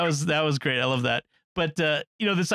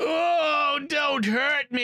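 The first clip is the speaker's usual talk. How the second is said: very slow, high, bad cowboy-style American accent; 10 semitones higher than usual. Retelling a movie villain's trick when found on the roof: imitating a terrible American accent. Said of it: "he does this terrible American accent".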